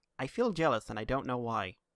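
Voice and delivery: ordinary talk, nothing marked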